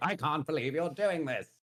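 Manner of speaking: high, dopey voice. Retelling a scene from a book, imitating Rogal Dorn's stupid voice. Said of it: "has the stupidest voice in the world".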